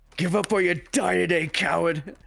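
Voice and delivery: high, furious scream. Screaming a threat in an enemy's face during a fight: screaming in someone's face. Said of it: "I'll scream in his face".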